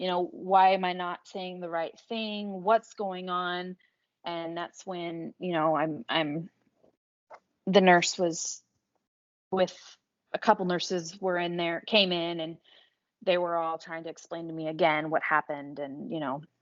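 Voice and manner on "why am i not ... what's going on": play-acted, tearful crying out. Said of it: "turning to him and crying and saying".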